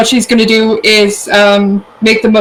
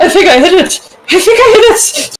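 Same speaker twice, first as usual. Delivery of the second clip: very high, stunned, awestruck tone with rising pitch; 10 semitones higher than usual. A player's character, having perhaps hit something, is in awe. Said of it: "kind of in awe for a second".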